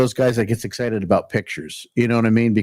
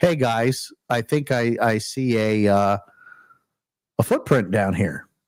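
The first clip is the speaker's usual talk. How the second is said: normal talking voice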